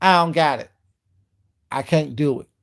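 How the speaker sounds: acted-out tone full of attitude. Repeating Leandra's line, imitating her tone of attitude. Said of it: "in that tone of attitude too".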